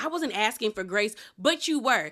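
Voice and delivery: plain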